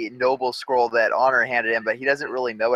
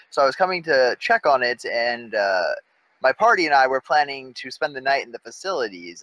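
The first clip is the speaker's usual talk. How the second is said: usual speaking voice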